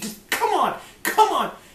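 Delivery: high, impatient, urgent yelling. Describing watching an old space show, acting out yelling at the TV. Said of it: "you're like screaming at the T V".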